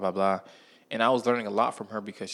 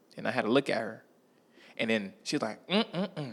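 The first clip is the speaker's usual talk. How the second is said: plain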